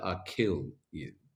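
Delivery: drawn-out, slow delivery. Repeating a line from their voiceover work, saying it slowly. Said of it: "I think I said it slow".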